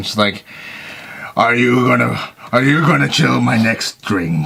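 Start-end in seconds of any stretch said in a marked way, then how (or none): 1.4-4.5 pirate-sounding delivery. Glaring at the thing that drops ice into a glass, pirate voice. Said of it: "I sound like a pirate".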